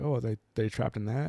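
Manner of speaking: plain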